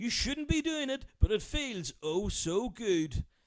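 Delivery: very high-pitched radio DJ presenter voice. Doing a bit for podcast listeners, in a Cool FM presenter voice. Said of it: "in a Cool FM presenter voice".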